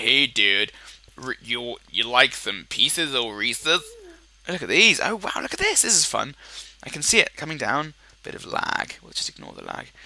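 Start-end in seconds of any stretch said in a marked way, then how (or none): 0.0-3.8 exaggerated, over-the-top put-on American accent. Imagining Americans offering Reese's from their pockets, American accent. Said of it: "that's my American accent".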